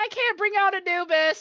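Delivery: loud calling voice. Voicing a character who stops and yells to her father: yelling to her father. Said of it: "yells out and tells her father".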